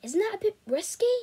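anxious, worried, nervous, slightly high-pitched voice. The narrator questions a plan to put a bug in the staff room, nervously. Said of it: "I said nervously".

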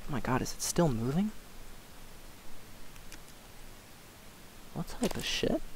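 shaken, frightened, scared whisper. Playing a game just after a typhon startled them, scared. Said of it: "That scared the living shit out of me".

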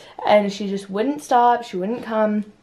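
ordinary delivery

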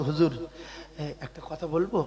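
soft, low-pitched, timid voice.

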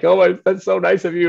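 very high-pitched, loud, gushing voice through tears. Retelling a reply to a coach's praise: retelling own tearful reply. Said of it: "I'm crying".

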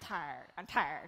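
really lazy, low Australian drawl. On stage, coaching the audience to say a word: really lazy Australian accent. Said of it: "it's kind of like really lazy Australian".

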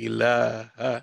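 very slow, drawn-out Arabic, syllables stretched. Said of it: "I'm gonna say it slow in Arabic".

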